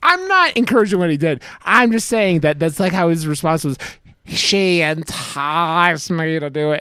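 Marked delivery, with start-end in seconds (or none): 4.2-6.8 very slow, long-drawn-out country drawl. Retelling a man's response about a woman, imitating a redneck-sounding old man. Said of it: "like redneck sounding dude".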